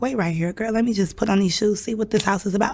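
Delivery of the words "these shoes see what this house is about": ordinary talk, nothing marked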